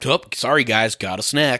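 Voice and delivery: scornful, mocking tone with open derision. Mocking how the Flash is written in the movie: mocking the Flash. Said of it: "He's like".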